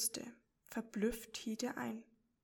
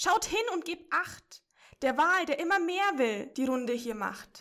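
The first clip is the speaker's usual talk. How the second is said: very loud, high, alarmed shout; 5 semitones higher, 8 dB louder than usual. Reading a story aloud, voicing Chrissy the crab calling out to the others, shouting. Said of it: "schrie Chrissy".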